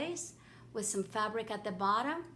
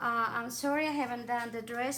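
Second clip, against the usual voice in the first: plain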